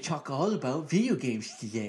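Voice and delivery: put-on nerdy voice. Welcoming listeners to the show in a joke voice, stereotypical nerd voice. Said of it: "Stereotypical nerd voice".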